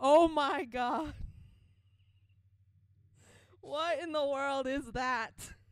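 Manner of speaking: yelling. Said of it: "I just yelled".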